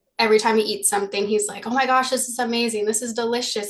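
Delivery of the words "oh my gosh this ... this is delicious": put-on excitable voice. Retelling how Ishida reacts every time he eats: imitating Ishida being excited. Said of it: "this very excitable guy".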